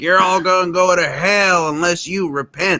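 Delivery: mock screaming preacher voice, very high and shrill. Retelling how a movie preacher character comes out: imitating a preacher screaming. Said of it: "he's screaming".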